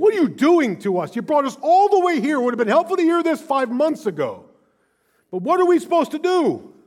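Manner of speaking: very high, very loud, swooping acted angry rant. Recounting being angry at God, the speaker reenacts his outburst, retelling an angry yell. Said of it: "I'm yelling to the point".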